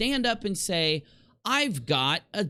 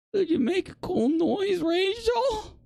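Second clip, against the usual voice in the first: very high, teasing, mocking simp voice; 13 semitones higher than usual. Mocking another speaker's request by imitating it: mocking imitation of a simp. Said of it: "I would never say".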